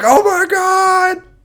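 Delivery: very high, loud, scandalized schoolkid-like shocked gasp. Reacting to a drama reveal, imitating a shocked high schooler. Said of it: "I feel like a high school student hearing some drama".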